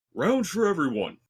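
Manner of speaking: big, booming, high-pitched shout. A very large gentleman enters the tavern, calling to everyone in a booming voice. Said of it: "you hear a booming voice".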